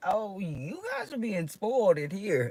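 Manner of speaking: very high, sing-song, swooping professional voice. Retelling what the speaker said to some kids: little professional voice. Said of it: "just my little professional voice".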